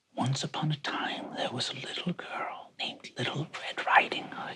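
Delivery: put-on soft old woman voice. Game master voicing one voice breaking out of a strain of voices, soft old woman's voice. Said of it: "you hear a soft old woman's voice say".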